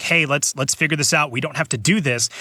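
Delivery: plain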